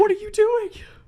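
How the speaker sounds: very high, loud, incredulous squeal. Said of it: "It's like".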